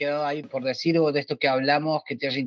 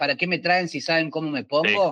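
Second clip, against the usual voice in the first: ordinary talk, nothing marked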